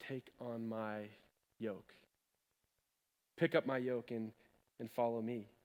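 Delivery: soft, deep, hushed half-whisper. Quoting Jesus to the listeners, the speaker says his words: half-whisper. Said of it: "He whispers".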